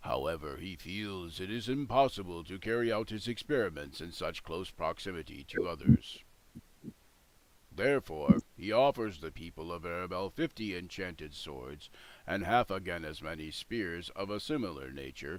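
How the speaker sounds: rigid, low, stiff, throaty guttural golem voice. A golem repeats its lord's request to the assembled group, in a stiff, guttural voice. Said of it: "In a stiff, guttural voice, the golem responds".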